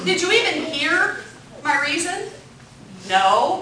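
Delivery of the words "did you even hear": normal talking voice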